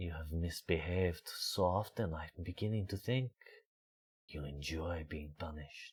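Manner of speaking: put-on soft, murmured, hushed, low, heavy French accent. Recalling a line he got to deliver, a little lower and very french. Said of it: "It was a little lower like this, very French".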